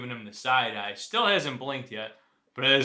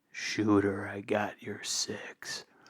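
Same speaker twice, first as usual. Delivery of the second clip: breathy whisper, very close to the ear; 4 semitones lower, 5 dB quieter than usual. Player leans over to another character's ear, whispering into an ear. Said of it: "I'm gonna whisper right into his ear".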